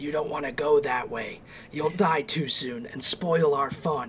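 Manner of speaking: scratchy, raspy little imp voice, calling out. Voicing unseen creatures calling out to the player from the left: raspy, shrill voice. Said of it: "A raspy, shrill voice calls out".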